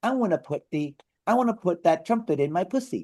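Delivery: put-on cute actress voice. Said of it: "how her voice is like".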